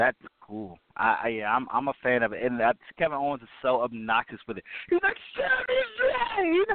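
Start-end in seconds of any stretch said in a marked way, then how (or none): 5.4-6.7 high, slow, hard emotional cry. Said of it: "saying it all hard".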